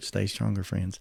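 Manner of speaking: hushed, very soft, quiet whisper. Ending his program with his usual closing phrase: whispered. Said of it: "I'll whisper it".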